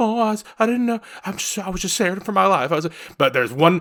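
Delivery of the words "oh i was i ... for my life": high, put-on frightened, innocent voice. Retelling how a woman acts in front of the police: imitating a woman acting scared. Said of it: "she gets all".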